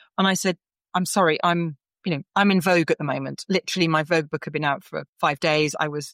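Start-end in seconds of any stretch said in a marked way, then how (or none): none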